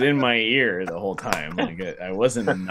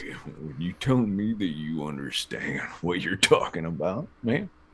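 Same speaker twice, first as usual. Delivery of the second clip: put-on cowboy outlaw voice; 3 semitones lower, 4 dB quieter than usual. Speaker trying a Red Dead Redemption 2 voice with a friend: Arthur impression. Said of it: "Your impression sounds more like the other guy".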